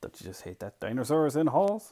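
plain reading voice

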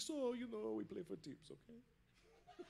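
soft, very slow, creaky, rough-edged hushed murmur. Retelling a call offering a live stream: Tony impersonation. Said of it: "this is my Tony impersonation".

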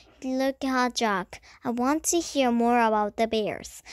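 ordinary delivery

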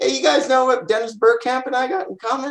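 very high, playful ribbing tone. Retelling a moment with his friends, the speaker quotes himself teasing them. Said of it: "I teased my friends".

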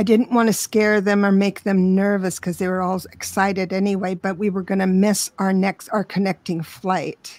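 ordinary talk, nothing marked

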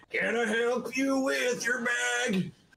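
very high, growled, lazy, slow drawl. Imitating a movie character's offer to carry a bag: imitating a growly drawl. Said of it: "with that growly drawl".

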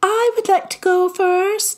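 very high, breathless and airy. Lizzie springs to her feet after a long silence; Lizzie Biscoe's breathless, high voice. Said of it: "she said in her breathless, high voice".

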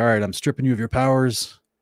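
mad, cross, angry delivery. Recapping a movie scene, the speaker voices a character who gets mad; imitating an angry voice. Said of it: "then he gets mad and he's like".

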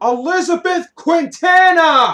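piercing, shrill, very high and very loud yell. Asked who the person is, answering with a name, shouting. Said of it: "No need to yell".

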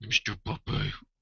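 hushed, breathy, soft voice. Speaker addresses the puppy in a talking-to-dog voice. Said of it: "that's my talking to my dog voice".

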